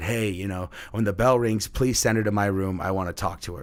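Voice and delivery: ordinary talk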